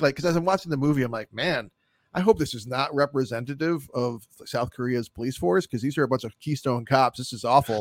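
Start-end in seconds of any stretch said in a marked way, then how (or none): none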